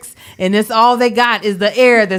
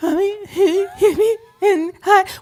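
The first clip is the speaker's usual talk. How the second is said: put-on high, slow, tearful, sob-talking child voice; 9 semitones higher than usual. Imitating a crying child trying to tell something: imitating a child crying. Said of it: "when Sai has been crying a lot".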